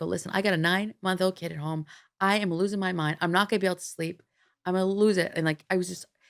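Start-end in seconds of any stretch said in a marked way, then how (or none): 0.1-5.3 mock begging through tears, tearful, crying. Retelling own phone call pleading for an urgent appointment: retelling a tearful plea. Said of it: "I go and I start crying".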